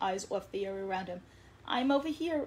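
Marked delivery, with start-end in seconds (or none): 1.7-2.5 loud, high shout while laughing. Redfin calls to Rainbowfish from behind, shouting laughingly. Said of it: "Redfin shouted laughingly from behind".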